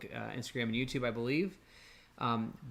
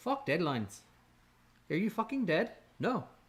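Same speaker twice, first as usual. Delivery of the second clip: higher-pitched acted Indian accent; 6 semitones higher than usual. Telling how nice it is to hear a guru speak, quoting him in a put-on indian accent. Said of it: "the Indian accent".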